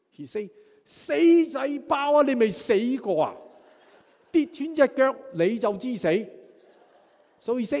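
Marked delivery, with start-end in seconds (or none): 0.9-6.3 shrill, loud, scolding shout in Cantonese. Retelling a mother coming out of the house after a jump, imitating her shout. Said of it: "Let's see whether I can imitate her".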